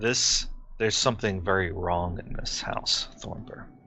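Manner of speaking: very quiet, low, hushed, barely audible whisper. Voicing a spirit who speaks to one player's character: low whisper. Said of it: "she says to you in a low whisper".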